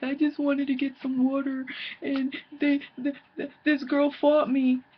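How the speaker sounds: mock weepy, high, tearful sobbing. Retelling a girl's tearful phone call to her mom: imitating someone crying on the phone. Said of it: "she's crying on the phone".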